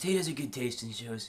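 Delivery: put-on breathy surfer-dude voice.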